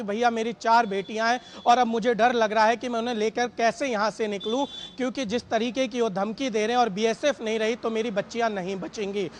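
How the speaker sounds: ordinary delivery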